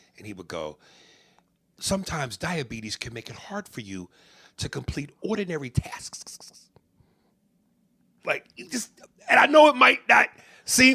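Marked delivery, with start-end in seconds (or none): 1.8-6.4 every syllable carefully over-pronounced, precise commercial voice. Retelling a diabetes commercial line: Cedric the Entertainer over-enunciating. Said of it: "he's pronouncing his words".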